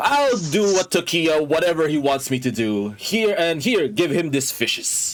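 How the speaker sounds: boisterous, high-pitched delivery. Speaker describes heading out, saying this in a really loud, boisterous voice. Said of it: "in a really loud, boisterous voice".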